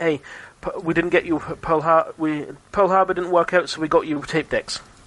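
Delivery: ordinary delivery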